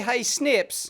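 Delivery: ordinary talk, nothing marked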